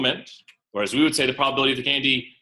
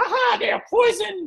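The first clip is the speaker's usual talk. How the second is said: horrible, very high witch voice. Telling a class a candy story, doing the witch in a horrible witch impression. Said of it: "Horrible witch impression".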